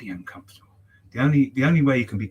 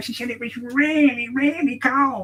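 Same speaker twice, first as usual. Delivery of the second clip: very high, shrill, loud witch voice; 13 semitones higher, 4 dB louder than usual. Retelling what a woman said about a cold car, in a witch-like voice. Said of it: "I know that sounded like a witch".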